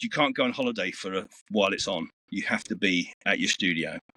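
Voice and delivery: ordinary talk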